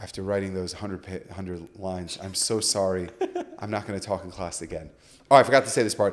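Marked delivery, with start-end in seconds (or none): 0.0-4.9 fake-sad apologetic tone, much lower and quieter. Retelling apologizing to her after writing one hundred lines; put-on sad apology. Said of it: "I put on my like really sad face".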